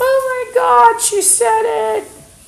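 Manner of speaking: shrill, slow, drawn-out upset exclamation. Retelling how others reacted when a line was said aloud: imitating upset people. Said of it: "were very upset".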